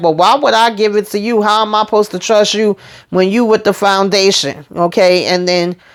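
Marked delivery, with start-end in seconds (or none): none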